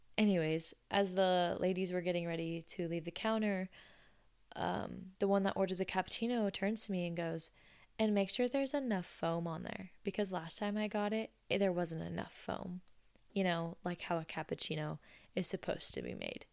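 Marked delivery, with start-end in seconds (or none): none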